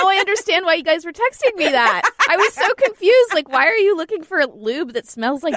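plain reading voice

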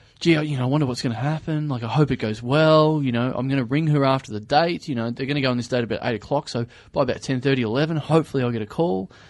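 ordinary talk, nothing marked

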